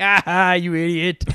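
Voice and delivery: mocking, sneering evil villain voice. Retelling a game where a freed chest turns evil: imitating an evil cursed chest. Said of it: "and then it's like an evil face".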